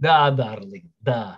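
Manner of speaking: low, phony, put-on Russian accent. After asking Carrie if she is Russian, answering in a put-on Russian accent. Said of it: "Did I do a good Russian accent?".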